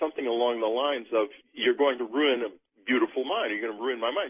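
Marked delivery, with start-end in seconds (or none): none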